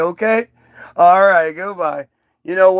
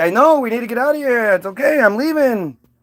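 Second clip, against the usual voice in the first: put-on old man voice, higher; 4 semitones higher than usual. Retelling the story of Lot, voicing Lot again: voicing Lot. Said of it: "And Lot's like".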